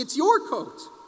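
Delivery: mock light, high-pitched screaming cry. Retelling a rabbi's story of two people offering each other a coat: imitating someone screaming. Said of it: "you both were screaming".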